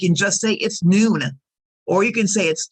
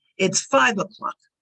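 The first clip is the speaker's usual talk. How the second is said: stress and rising pitch on five. Teaching how to tell the time, stress and rise on five. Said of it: "Notice how we stress the number in our sentence. Our voice goes up to emphasize what the time is".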